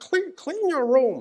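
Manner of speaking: very high, squeaky, froggy puppet voice. Quote a man's advice while attempting his voice, a bit like Kermit the Frog. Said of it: "a sort of voice a bit like Kermit the Frog".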